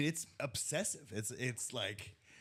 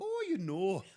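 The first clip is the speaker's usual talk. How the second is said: higher mock Irish accent, tossed off lightly. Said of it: "But then she went Irish".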